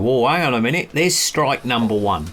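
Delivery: plain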